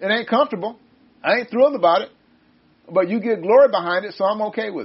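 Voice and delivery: ordinary talk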